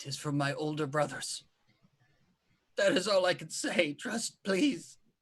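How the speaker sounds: tearful, forced out through clenched teeth. A storyteller voicing a character answering under a magic deal, tearful through gritted teeth. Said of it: "saying all this through gritted teeth".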